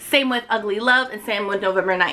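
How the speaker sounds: plain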